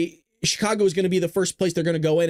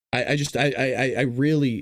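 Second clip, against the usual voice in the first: stuttering, stammering speech at lower pitch; 6 semitones lower than usual. Trying to make sense of what he just described, stuttering. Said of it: "when I'm stuttering and I go".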